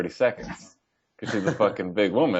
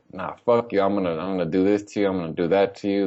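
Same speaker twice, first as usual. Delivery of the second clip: ordinary delivery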